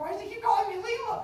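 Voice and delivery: baffled student voice, high and loud.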